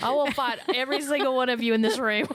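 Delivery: high, laughing, mock menacing delivery.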